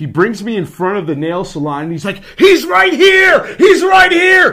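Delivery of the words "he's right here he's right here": very loud, very high, drawn-out yell. Retelling how a friend yelled in the window: imitating a friend yelling. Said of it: "Yelling in the window at this lady".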